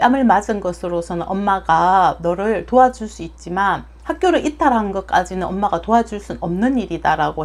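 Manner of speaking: ordinary talk, nothing marked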